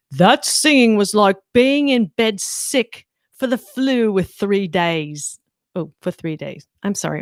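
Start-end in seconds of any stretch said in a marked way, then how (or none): 0.2-5.4 poor put-on British accent. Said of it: "My British accent is so bad".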